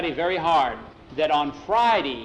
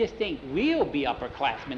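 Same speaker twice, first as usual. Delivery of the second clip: plain reading voice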